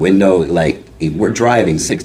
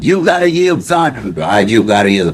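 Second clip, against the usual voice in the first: pitched-up, screaming yell; 5 semitones higher than usual. Retelling a traffic argument, acting out his wife screaming at the other driver. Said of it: "She's screaming as well".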